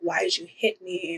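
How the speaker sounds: put-on bawling, mock sobbing. Retelling a scene where a woman was hit, imitating her bawling. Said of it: "she just starts bawling".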